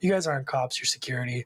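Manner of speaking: ordinary talk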